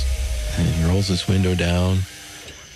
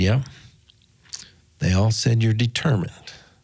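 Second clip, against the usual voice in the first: ordinary talk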